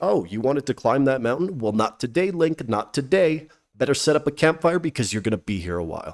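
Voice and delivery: ordinary talk, nothing marked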